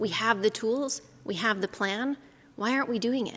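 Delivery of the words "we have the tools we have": plain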